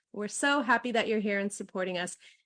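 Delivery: normal talking voice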